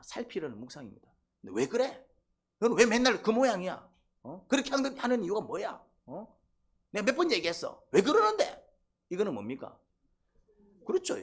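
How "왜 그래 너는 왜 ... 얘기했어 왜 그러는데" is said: loud, high, accusing, condemning tone. Speaker contrasts reflective questioning with condemnation, using a condemning voice. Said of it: "정죄 목소리가 나오죠".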